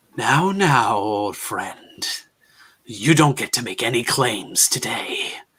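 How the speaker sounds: smooth, coaxing, tempting, seductive voice. Narrating a voice that booms out from a red light across the sky, booming and seductive. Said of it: "the boom is less intimidating and much more seductive as it speaks".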